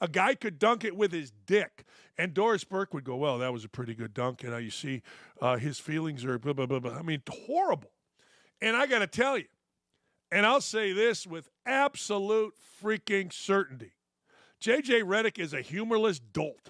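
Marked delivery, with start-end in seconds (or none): 3.2-6.9 confiding announcer-style half-whisper, secretive. Imitating an announcer calling a dunk: imitating Doris Burke half-whispering. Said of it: "she's always whispering".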